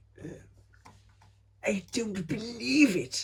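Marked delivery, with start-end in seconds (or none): 1.6-3.2 very high, very slow, stretched-out put-on voice. Answering a request for an impression: Victor Meldrew impression. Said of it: "your finest Victor Meldrew impression?".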